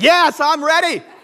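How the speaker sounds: acted-out, very high-pitched, loud yelling. Retelling a string of texts, yelling at the phone: retelling yelling at a phone. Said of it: "I was yelling at my phone".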